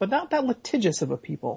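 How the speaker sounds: ordinary talk, nothing marked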